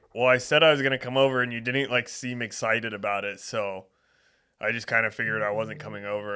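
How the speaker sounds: ordinary delivery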